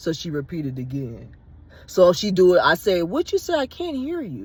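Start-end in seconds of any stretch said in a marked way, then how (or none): 3.0-4.5 teasing, playful, mock-dumb voice, pitched higher. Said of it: "I'm being funny where I said".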